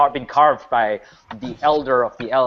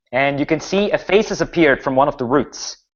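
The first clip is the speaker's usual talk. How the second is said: ordinary talk, nothing marked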